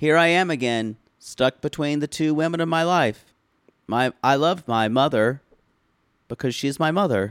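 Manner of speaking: deadpan, flat, emotionless monotone with no feeling. Retelling a family argument from the show, quoting Colt, imitating Colt's flat, emotionless delivery. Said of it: "Colt just says with no emotion".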